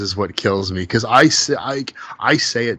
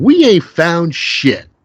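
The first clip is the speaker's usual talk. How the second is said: high, slow, drawn-out, annoyed and irritated grumble. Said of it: "he looks up so annoyed and irritated".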